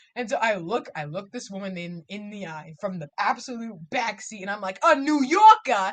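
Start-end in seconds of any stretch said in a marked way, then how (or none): 4.8-5.9 very loud, terrible, awful put-on New York accent. Asking a woman for a new yorker from the back seat: terrible new york accent. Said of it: "in a terrible accent".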